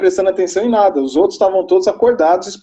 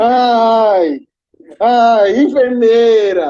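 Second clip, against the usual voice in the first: mock groaning cry with ai stretched long; 3 semitones higher than usual. Retelling a man in a shared room who moaned all night, imitating his moaning. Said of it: "A noite inteira gemendo e gritando".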